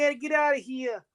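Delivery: put-on high Long Island accent. Mocking a kid on a horrible haunting record: kid's Long Island accent. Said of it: "hear the kid's accent like he's like from Long Island".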